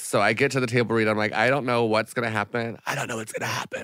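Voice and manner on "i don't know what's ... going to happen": barely-there lost voice, pushed out with no voice. Retelling own words at a table read after losing voice: imitating own lost voice. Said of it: "had no voice".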